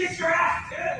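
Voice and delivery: tantrum-like angry voice. Arguing with the kiosk worker after being accused of yelling: throwing a tantrum. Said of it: "throwing a tantrum in a grocery store".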